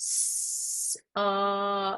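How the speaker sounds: word stretched out really slowly, long and drawn-out. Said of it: "Okay, redo".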